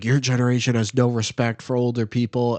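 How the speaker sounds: play-acted, furious, angry scolding scream. Retelling how a man at a gas station screamed at you, retelling an angry scream. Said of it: "he started screaming at me".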